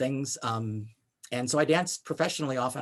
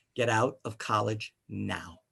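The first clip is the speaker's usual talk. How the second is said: hushed, very quiet, slow, deliberate voice; 4 semitones lower than usual. Retelling a guest teacher's advice to leave college, imitating someone speaking very quietly. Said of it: "she very quietly said".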